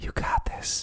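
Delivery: put-on whisper. Joking about spotting someone at the gym: imitating whispering encouragement. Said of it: "get real close and whisper in your ear".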